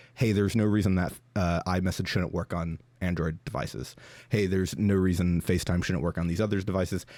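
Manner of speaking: normal talking voice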